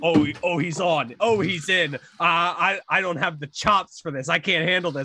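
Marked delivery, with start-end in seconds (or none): none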